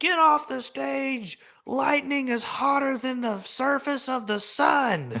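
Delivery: acted-out very high, slow, drawn-out yell, "sun" stretched. Retelling a sheriff's warning across a stormy field: imitating a man yelling. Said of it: "I just remember this one guy yelling".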